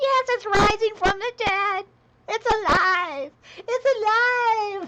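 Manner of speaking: very high, drawn-out, stretched-out cry. While showing a coloring technique, the speaker quotes a film: Young Frankenstein quote. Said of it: "from uh, Young Frankenstein".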